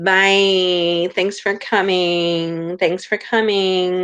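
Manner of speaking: slow, drawn-out, sarcastic yet affectionate delivery. Saying goodbye to live stream viewers: mock sarcastic Kardashian goodbye. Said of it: "in as sarcastic but lovingly as possible".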